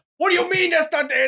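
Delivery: voice pitched very high, then abruptly cut off. Acting out Joey Diaz arguing over an answer: Joey Diaz impression. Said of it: "or he would be like this".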